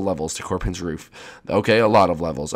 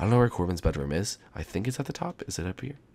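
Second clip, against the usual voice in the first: soft, hushed half-whisper all the way through; 7 dB quieter than usual. Streamer looking for a sleeping character's bedroom in a game, half-whispering. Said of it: "I have to whisper".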